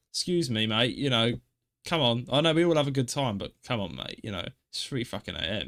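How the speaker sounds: mock-polite, laid-on politeness, kept low. Imagining knocking on his door at three a.m., mock-polite. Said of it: "I'd be polite".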